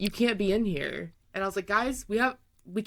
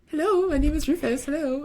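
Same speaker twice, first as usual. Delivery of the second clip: put-on high, little English orphan boy voice; 7 semitones higher, 5 dB louder than usual. Speaker demonstrating the voice they give a pet: Rufus as English orphan boy. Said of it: "Little English orphan boy".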